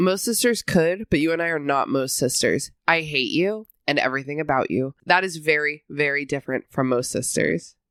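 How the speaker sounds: plain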